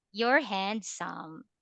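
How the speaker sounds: insincere, mocking, sarcastic tone. Showing how a blunt compliment can come across, sarcastic compliment. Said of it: "that sounds very sarcastic".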